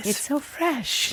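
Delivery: sweetest possible high, little voice. Retelling how a cousin says a phrase: imitating cousin Rosetta's sweet voice. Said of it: "In the sweetest voice".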